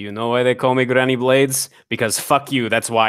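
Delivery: talking to herself, half aside. Voicing a character stabbing fallen wolves: muttering to herself.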